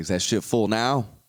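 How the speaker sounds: hostile, confrontational, aggressive tone. Retelling a professor's jar demonstration to students, imitating an aggressive professor. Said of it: "I don't know why I'm making him aggressive".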